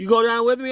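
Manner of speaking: put-on frightened voice, high, loud, clinging. Retelling a lady afraid to go down a slide: imitating a scared woman. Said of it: "definitely afraid to go down the slide".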